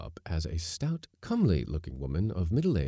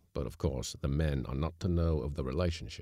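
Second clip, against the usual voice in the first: ordinary delivery, nothing marked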